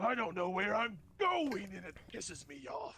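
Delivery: loud guttural yell. Voicing a lost creature yelling at a player: creature yelling. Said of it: "as it yells towards you".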